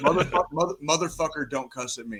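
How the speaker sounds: in-your-face, stumbling drill-sergeant dressing-down. Retelling how a drill sergeant scolded a soldier: imitating a drill sergeant getting in someone's face. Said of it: "gets right in her face".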